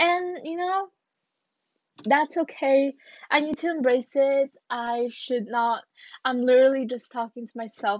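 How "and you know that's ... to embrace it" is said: anxious, strained, stressed voice, pitched up. Podcast host telling listeners about their anxiety, with audible stress in the voice. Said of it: "you can hear the stress in my voice".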